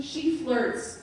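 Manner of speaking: the word she leaned on with stress.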